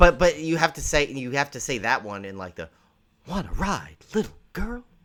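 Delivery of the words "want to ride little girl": creepy, high, swooping delivery. Suggesting how a creepy film title should be said: William Shatner voice. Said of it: "you gotta do it in Shatner's voice".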